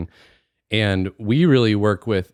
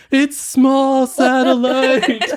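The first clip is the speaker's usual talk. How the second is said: mock shrill yell, pitched very high, loud; 6 dB louder than usual. Acting out someone being dragged out by security guards: acting out a yell. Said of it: "he's yelling".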